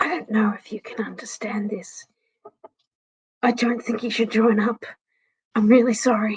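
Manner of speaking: gentle, soft, barely voiced hushed whisper. Voicing Bluey speaking in Draconic to the group: Bluey softly whispering. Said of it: "Bluey sort of softly whispers".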